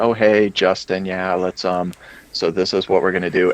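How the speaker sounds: mock calm, relaxed voice. Speaker recalls briefing a shop owner before the cameras roll, retelling own calm voice. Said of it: "my voice goes all calm".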